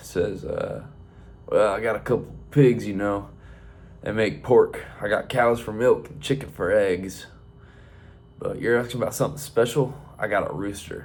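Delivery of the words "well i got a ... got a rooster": rough, gruff farmer voice. Telling a joke, voicing the farmer answering a young farmer: real gruff farmer voice. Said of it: "real gruff".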